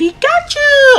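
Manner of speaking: very high, slow squeaky cry. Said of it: "like, a Pikachu voice".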